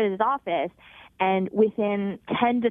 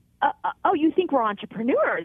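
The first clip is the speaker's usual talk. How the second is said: high-pitched stammering sputter through laughter; 6 semitones higher than usual. Retelling own reply in the moment, imitating sputtering words out through laughter. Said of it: "I kind of sputter out in my laughter".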